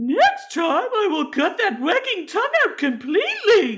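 very high, loud, shrill sing-song voice swooping all over. Telling a story from 1767, quoting what Elizabeth said to Clifford in her voice. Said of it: "That's my voice of her".

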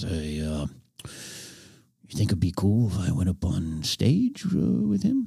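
very quiet, humble, very slow put-on wrestler voice. Retelling what a wrestler asked backstage: bad Roddy Piper impression, very quiet, humble. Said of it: "I'm doing a bad impersonation".

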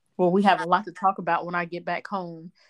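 ordinary delivery

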